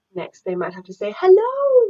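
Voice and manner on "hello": very high-pitched, loud, squeaky voice. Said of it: "in a very high-pitched voice".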